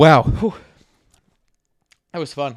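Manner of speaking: out of breath, panting. Having just finished recounting the whole show's plot, out of breath. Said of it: "I just gotta catch my breath now".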